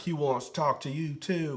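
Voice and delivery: fake Southern girl voice, put-on accent. Retelling what the Hell manager replies, in a put-on Southern woman's voice. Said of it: "she's southern in my voice when I do it".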